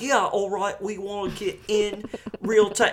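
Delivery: put-on British accent, very high. Retelling what the documentary guy says: Jamie from Ted Lasso impression. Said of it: "sounds like me doing an impression of Jamie from Ted Lasso".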